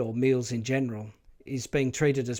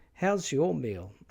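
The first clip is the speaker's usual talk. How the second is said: pitch falls on the word meal; 3 semitones higher than usual. Showing the default way to say a question: falling pitch on 'meal'. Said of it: "you would say this line with the falling pitch contour".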